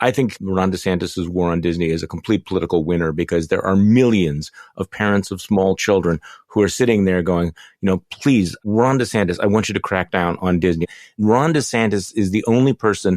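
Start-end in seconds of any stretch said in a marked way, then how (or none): none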